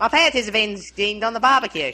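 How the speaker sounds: clichéd Aussie accent, laid on. Saying a requested line aloud, as asked, in a stereotype australian accent. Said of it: "with the stereotype accent".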